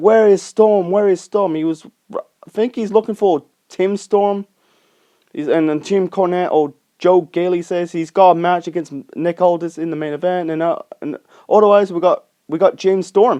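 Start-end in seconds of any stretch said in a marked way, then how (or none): 0.0-1.6 angry, demanding delivery. Retelling a wrestling segment where someone shouts for Storm: imitating an angry shout. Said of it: "angry and shouting, like".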